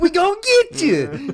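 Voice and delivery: very high, very loud, shrill hillbilly demon holler. Voicing the game's demons as hillbillies: hillbilly demon voice. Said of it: "The demons are hillbillies".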